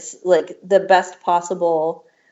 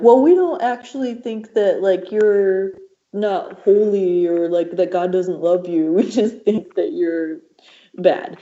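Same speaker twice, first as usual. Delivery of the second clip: bro-dude voice; 2 semitones higher than usual.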